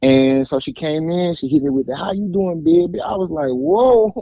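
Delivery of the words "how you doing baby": put-on pitched-up New Orleans accent. Speaker quotes a woman greeting him, in a New Orleans accent. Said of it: "You know I love that New Orleans accent".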